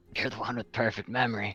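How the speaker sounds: high-pitched whisper. Playing a character, whisper to Sailor while everyone at the king's hearing looks on. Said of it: "I whisper to him".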